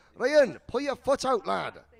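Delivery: poor fake Newcastle accent. Imagining a collect call from Granny Wendy in Newcastle: bad Newcastle accent as Granny Wendy. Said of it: "That's not a great Scottish accent or a Newcastle accent".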